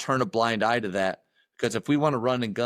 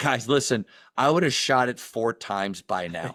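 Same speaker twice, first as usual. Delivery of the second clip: plain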